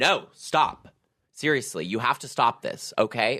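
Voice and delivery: acted-out scolding tone. Retelling how someone took him aside to cure his hiccups: imitating someone scolding. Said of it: "she scolded them out of me".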